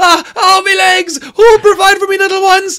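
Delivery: very high, loud Irish man character voice. Retelling a cartoon scene, voicing an Irishman hit by bumper cars: Irish man character voice. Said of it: "clearly an Irish descendant of Homer Simpson".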